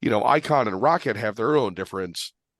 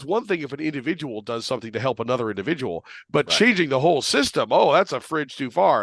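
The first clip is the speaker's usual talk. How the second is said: mock, openly sarcastic tone; 3 semitones higher than usual. Mocking a liberal point of view about changing the system: mock sarcastic tone. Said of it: "I'm being sarcastic about it".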